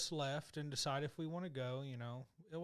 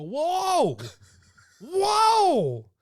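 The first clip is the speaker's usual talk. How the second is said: very loud, very high, stretched-out yell; 20 dB louder than usual. Retelling stopping someone from buying tickets, retelling a yell. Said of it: "You don't have to yell".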